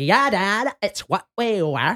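slow, flipping-out, panicky dad voice. Retelling a comedian's bit about finding his daughter's thong: imitating a comedian's flipping-out dad voice. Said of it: "he's doing the voice".

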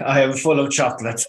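put-on high-pitched little German boy voice. Quoting a little German character from The Simpsons: imitating little German Simpsons boy. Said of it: "as the little German fella in The Simpsons used to say".

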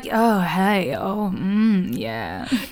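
fake sultry, seductive podcast voice. Host joking about how podcast voices sound, doing a mock-sexy podcast voice. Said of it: "the podcast voice is just trying to be sexy".

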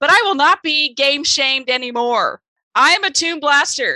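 loud shouting, yelled. Declaring to another speaker that they are a secret gamer: yelling. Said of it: "I don't know why you are yelling about this".

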